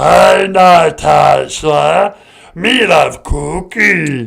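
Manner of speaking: rough croaking voice, words drawn out. Playing a caller on a call-in bit: Cookie Monster voice. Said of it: "hi, Cookie Monster".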